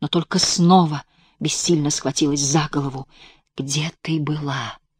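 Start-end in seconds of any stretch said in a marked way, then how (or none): 3.6-4.8 quiet whispered voice. Egor sits beside her on the bed and asks her, whispering. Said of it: "шепотом спросил Егор".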